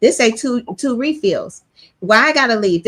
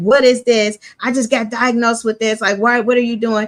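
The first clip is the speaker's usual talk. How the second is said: put-on crying voice of a man. Retelling a video where a man reacts to a diagnosis: imitating a crying man. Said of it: "He crying, like".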